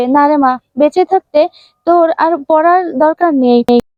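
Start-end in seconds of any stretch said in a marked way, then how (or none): none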